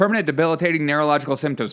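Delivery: rattled off very fast, tongue-twister rush. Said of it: "Say that ten times fast".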